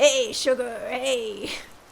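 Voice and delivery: Italian New Yorker voice. Comparing their baby voice to another voice, speaker does a new york italian voice. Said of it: "my like New York Italian voice".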